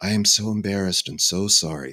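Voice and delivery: put-on very soft voice. Retelling an apologetic phone call from Rudy; imitating Rudy's very soft voice. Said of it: "He has this very soft voice".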